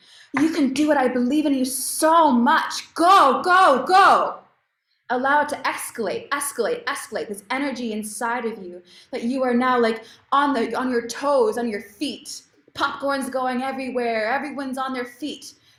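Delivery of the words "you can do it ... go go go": raised, slow, rousing cheering voice, building up. Cheering the listener on to let the energy rise, raised voice. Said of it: "I'm raising my voice".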